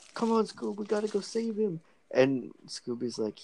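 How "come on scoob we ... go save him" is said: very high cartoon voice, pushed way up. Retelling a video's scenes, imitating Shaggy: Shaggy voice. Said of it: "Shaggy's like".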